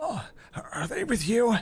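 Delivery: very high, skittish, jittery nervous voice. Voicing a skittish, desperate man meeting the party in an alleyway: nervous, skittish character. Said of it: "sort of nervous looking".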